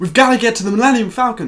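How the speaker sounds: loud, high-pitched English accent.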